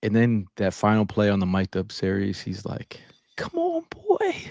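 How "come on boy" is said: voice pushed very high, high-pitched calling. Retelling someone's line from a mic'd up series, imitating his high voice. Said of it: "He had that high voice".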